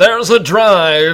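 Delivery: loud, slow, booming announcer voice.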